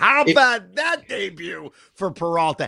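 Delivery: talking through laughter. Speaker reacts to a pitcher's rough debut: laughing while speaking. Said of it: "And I'm sorry I'm laughing".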